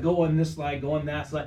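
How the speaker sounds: ordinary delivery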